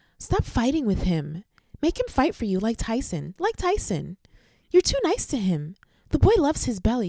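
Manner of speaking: put-on character voice with swooping pitch. Reading a message aloud as Exhibit A, in a Karen voice. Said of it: "I'm actually going to read it in my Karen voice".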